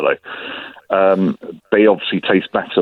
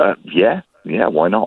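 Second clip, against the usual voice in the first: utterly, massively unenthusiastic tone. Agreeing to hear what is in an invented cocktail: massively unenthusiastic. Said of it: "You sound massively unenthusiastic".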